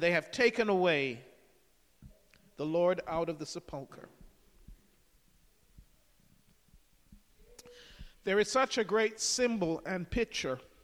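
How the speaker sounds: emotion breaking through, voice catching, choking up. Speaking to listeners about a Bible passage that moves them, choking up. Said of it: "sorry for choking up".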